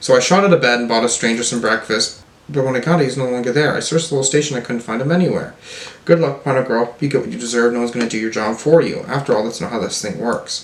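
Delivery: normal talking voice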